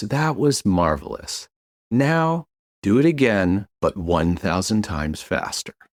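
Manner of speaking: soothing, calm, reassuring voice. Retelling a surgeon speaking after someone finishes part of a procedure: mimicking a calm, reassuring voice. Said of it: "in a very kind of calm, reassuring voice".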